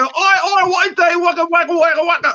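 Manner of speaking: put-on mimicked Geordie accent. A speaker shows friends how a Geordie talks: imitating a Geordie accent. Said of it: "until you hear a Geordie talk".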